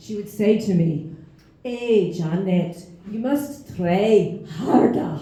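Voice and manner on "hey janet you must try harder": put-on thick Scottish accent. Recalling a primary school teacher scolding her, doing Miss Heron's thick Scottish accent. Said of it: "in her thick Scottish accent".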